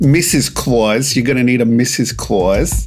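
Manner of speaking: put-on Long Island accent. Joking about a list of story ideas, saying Missus Claus: put-on Long Island accent. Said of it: "I feel like that was a Long Island".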